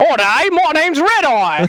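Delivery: put-on Australian accent, laid on thick. Doing an impression of Red Eye for the panel: Red Eye impression. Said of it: "I'll do my Red Eye impression".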